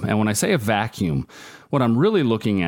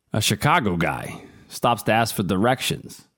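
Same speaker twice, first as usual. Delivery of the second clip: put-on New York accent. Recounting a stabbing news story to others, the speaker uses a New York accent. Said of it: "I don't know why I said that with a New York accent".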